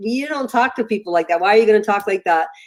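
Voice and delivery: ordinary talk, nothing marked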